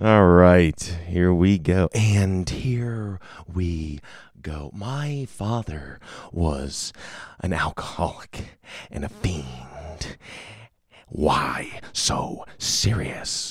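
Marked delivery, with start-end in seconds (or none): 1.9-13.5 whispered, hushed, breathy, airy movie-villain voice. Showing off impressions to listeners, doing a Heath Ledger impression. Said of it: "I'm getting good at these impressions".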